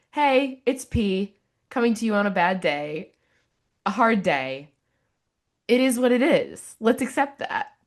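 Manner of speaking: loud, high, chipper, excited voice.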